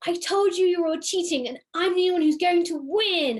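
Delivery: angry bellowing villain roar. Voicing a character who smashes the ground, accusing players of cheating: roaring at the players. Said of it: "roars at you".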